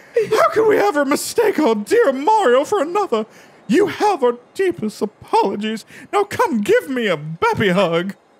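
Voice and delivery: put-on mouse character voice. Voicing a game character who apologizes to Mario: Miss Mouse voice. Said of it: "I forgot that's my other voice".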